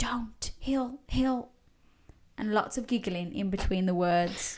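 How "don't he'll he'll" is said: put-on soft, eerie, whispered ghostly girls' voices. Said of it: "it was something like".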